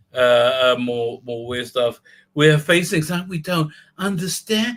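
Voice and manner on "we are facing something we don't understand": breathy voice with lots of breath. Quoting a line from the show: breathy Michael Burnham voice. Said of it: "in her breathy voice".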